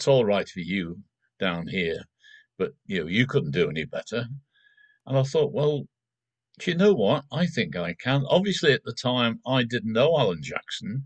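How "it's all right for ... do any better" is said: mock deadpan delivery, flat tone. Retelling what she said, looking at the speaker deadpan; imitating a deadpan remark. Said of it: "she looked at me deadpan and said".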